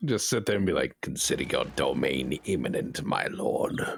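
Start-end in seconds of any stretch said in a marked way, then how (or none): 1.0-3.8 very low, slow, drawn-out voice. Voice-acting a line for chat in Wormtongue voice. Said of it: "I just I can voice act it".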